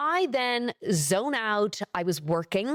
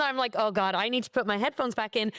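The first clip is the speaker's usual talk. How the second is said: ordinary delivery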